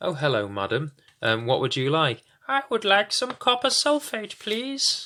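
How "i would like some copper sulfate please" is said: put-on very high lady customer voice. Playing both sides of a phone order, taking the customer's part in a lady customer's voice. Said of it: "I'm really good at voices".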